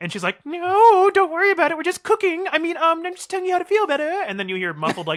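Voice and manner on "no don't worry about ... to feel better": very high, odd, weird grandma voice. Acting out grandma answering the grandchild, in a weird grandma voice. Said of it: "your voice sounds weird".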